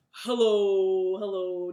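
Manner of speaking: as deep as possible, booming, loud, drawn-out. Leading a group warm-up, saying hello as low as they can. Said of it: "Let's say hello as low as we can".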